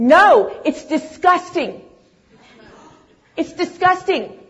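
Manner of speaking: grand, loud, high announcing voice. Retelling their blurted reply to a woman's question, retelling a loud proclamation. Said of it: "in like this proclamation voice".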